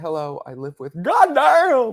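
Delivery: put-on Southern drawl, loud, swooping, words drawn out. Imitating a woman who sounds like she's from the south. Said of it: "She sounds like she's from the South".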